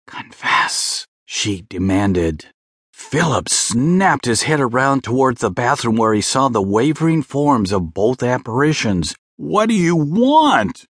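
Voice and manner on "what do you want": high, alarmed, anxious shout, stretching out "want". Philip leaps from the bed and calls out to two apparitions with an anxious shout. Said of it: "he anxiously shouted".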